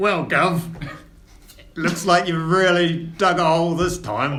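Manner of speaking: loud, high-pitched put-on Cockney accent. Voicing an older dwarf speaking to his son, the speaker attempts a Cockney accent. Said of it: "who is also going to attempt a Cockney accent".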